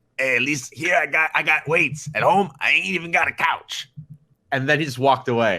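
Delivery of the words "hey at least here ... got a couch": grumbling, complaining voice, pitched a little high. Retelling what a guy who lived at the gym said: grumbly voice. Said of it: "he said with his grumbly voice".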